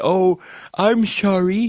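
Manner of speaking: put-on very high-pitched cartoon granny voice. Quoting the Treasury Secretary's apology from the other day, Janet Yellen as a cartoon old granny. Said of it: "She sounds like a character from like a cartoon".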